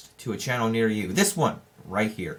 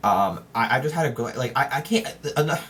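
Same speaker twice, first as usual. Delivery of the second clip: stuttering, stammering, tripping over words. Speaker talking about a show's new season: stuttering. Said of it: "I'm stuttering".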